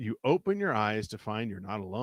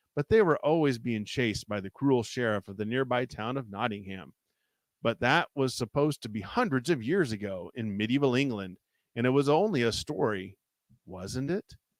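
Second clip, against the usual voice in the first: ordinary delivery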